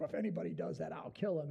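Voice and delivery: put-on furious king voice. Retelling a Bible story, King David's reply to Nathan: imitating furious King David. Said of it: "King David gets furious".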